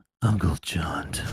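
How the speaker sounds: very low, deep voice, lips right on the mic. Saying own name after being asked: deep voice close to the microphone. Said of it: "can you say your name in that, that deep, really close to your microphone voice".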